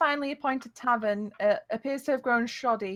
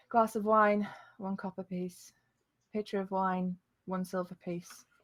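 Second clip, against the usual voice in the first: strange, flat, dull, almost hollow tone; 3 semitones lower, 4 dB quieter than usual. Game master voices the barkeeper quoting wine prices, in a strange, dull, hollow voice. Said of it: "answers you in like a very strange, dull, almost hollow voice".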